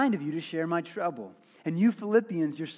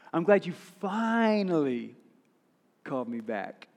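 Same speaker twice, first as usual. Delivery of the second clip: tone loaded with passive-aggressive reproach. Speaker acting out someone whose phone call was missed, mock passive-aggressive. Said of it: "kind of in a passive-aggressive voice and tone".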